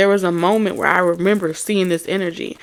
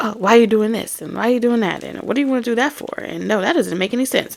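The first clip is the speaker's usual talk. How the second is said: play-acted fast, whiny, condescending know-it-all nagging; 3 semitones higher than usual. Retelling how a pessimistic cousin kept complaining: imitating a condescending complainer. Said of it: "He was just that character of".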